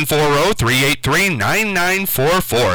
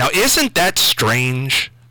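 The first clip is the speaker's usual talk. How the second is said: usual speaking voice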